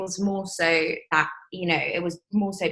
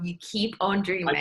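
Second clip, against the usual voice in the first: ordinary talk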